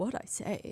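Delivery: put-on half-whispered, intense, authoritative Southern accent. Retelling a man's confrontational question at the start, in an imitated southern accent. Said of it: "it was kind of in like a southern accent".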